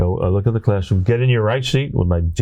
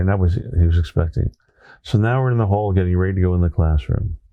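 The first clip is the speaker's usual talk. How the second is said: normal talking voice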